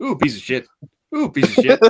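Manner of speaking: very high, loud cartoon voice with swooping pitch. Imitating someone reviewing movies: James Woods from Family Guy voice. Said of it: "sound like James Woods from Family Guy".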